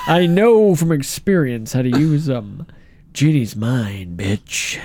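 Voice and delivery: put-on deep cartoon jock voice. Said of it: "Patrick Warburton".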